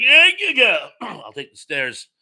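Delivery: high, loud, nervous, dismissive voice.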